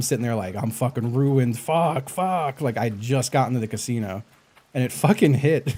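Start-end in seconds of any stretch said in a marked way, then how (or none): 0.6-2.6 mock freaked-out panic, slow, pitch climbing. Retelling sitting at the roulette screen after losing everything: imitating own panic. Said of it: "And I'm freaking out".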